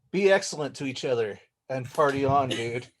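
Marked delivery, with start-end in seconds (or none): none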